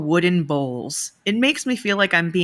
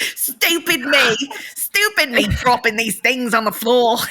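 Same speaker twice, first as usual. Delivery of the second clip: put-on London Cockney accent, laid on, pitched up; 5 semitones higher than usual. Taking a turn at trying out voices, speaking in a cockney accent. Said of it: "voice in Cockney".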